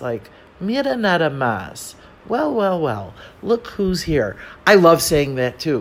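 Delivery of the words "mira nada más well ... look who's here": snarky, snide tone with swooping sing-song. Demonstrating how a Spanish expression should be said, with a snide tone. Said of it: "you always have to say it with like a tone of kind of snideness".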